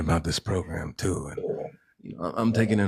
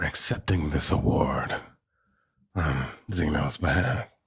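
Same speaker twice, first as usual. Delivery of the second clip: put-on heavy lifelong-smoker woman's voice; 2 semitones lower than usual. Mock-accepting an award on someone's behalf, in a lifelong-smoker woman's voice. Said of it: "I sound like a woman who's been smoking".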